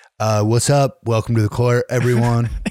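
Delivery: relaxed, laid-back hippie voice. A host voices the cooler Cancel Court guy persona: Cali hippie voice slipping into Donald Trump. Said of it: "like you're a hippie in Cali".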